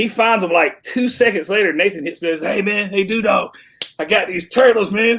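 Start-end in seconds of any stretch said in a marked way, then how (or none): 2.5-5.2 tough, thuggish, swaggering street voice. Retelling a message from Nathan about turtles: imitating Nathan like a menace to society. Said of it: "why do you make him sound like that, like, fucking menace to society".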